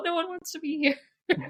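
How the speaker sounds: imitated crying. Retelling own reaction to patients canceling appointments: retelling own crying. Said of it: "just crying".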